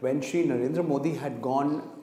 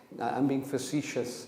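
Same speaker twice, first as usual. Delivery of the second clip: ordinary delivery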